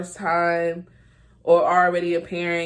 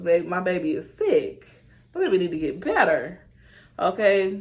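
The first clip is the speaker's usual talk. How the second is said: usual speaking voice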